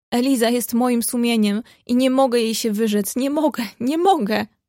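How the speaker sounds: plain reading voice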